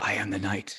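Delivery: speaking in a whisper. Speaking in character to oneself during a game, whispering. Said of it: "And I whisper to myself".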